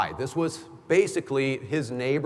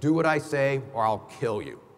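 put-on voice through clenched teeth, threatening. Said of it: "he talked through clenched teeth".

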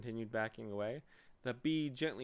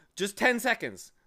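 very loud, high, eager excited cry; 7 semitones higher, 10 dB louder than usual. Narrator reading Milo's answer to the bee, crying out excitedly. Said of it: "cried Milo excitedly".

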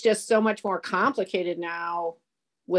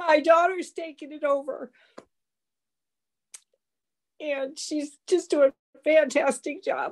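tearful, pitched-up voice, close to crying; 7 semitones higher than usual. Speaking in a farm-management discussion about her family's farm, getting tearful. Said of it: "And I'm gonna cry".

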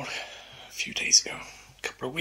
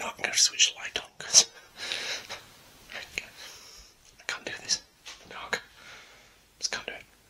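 soft, hushed whisper. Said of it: "I don't know why I'm whispering".

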